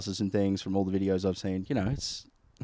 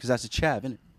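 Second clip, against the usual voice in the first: plain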